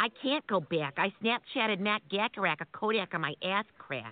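put-on Minnesota accent held through the whole line. In a comedy bit, a Minnesotan answers someone from Maryland: Minnesota accent. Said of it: "That's the Minnesota accent".

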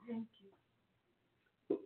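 soft, high, very quiet half-whisper. Thanking the other speaker for the welcome to the show: half-whispering. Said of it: "She's, like, whispering".

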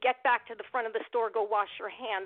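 ordinary talk

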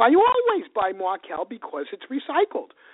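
put-on Queens accent. Quoting the woman who hosted the speaker, imitating her Queens accent. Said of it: "she says to me in her Queens accent".

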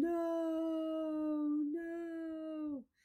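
very high, long, drawn-out scream. Retelling a mother finding her son turning blue, acting out her screaming. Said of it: "just starts screaming".

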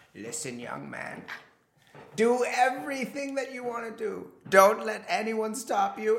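put-on elderly man's voice. Asked for anti-wrinkle advice, speaker answers in an old man voice. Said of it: "I need you to turn on your old man voice".

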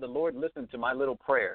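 ordinary talk

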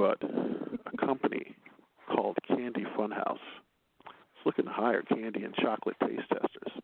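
put-on slow, sultry, seductive voice. Reading the final story tonight in a put-on voice: sexy voice. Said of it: "So I'm going to do this in my sexy voice".

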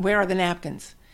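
ordinary talk

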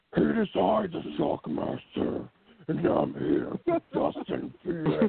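high, swooping, half-choked announcer voice. Announcing yourself alongside Dustin Phoenix, in a Shockmaster voice, like choking on food. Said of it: "It sounds like you're like choking on food there with the Shockmaster voice".

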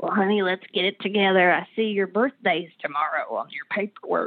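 rough, rasping voice. Retelling what a woman who picked her up from rehab said, in a rough smoker's voice. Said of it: "That rough smoker's voice".

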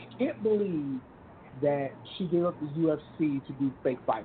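normal talking voice

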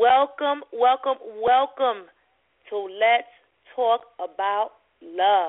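slow, deliberate, halting, extra-clear enunciation. A radio host welcomes listeners to the show, speaking slowly and clearly. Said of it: "practice saying my words a little more slowly and more clearly".

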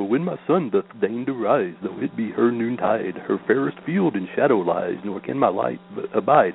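silly, goofy cartoon moose voice. Reading a bit of florid verse aloud, playing it up in a goofy cartoon moose voice. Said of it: "I always want to read this in a Bullwinkle voice".

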